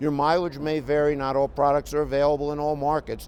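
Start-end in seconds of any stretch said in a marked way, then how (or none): none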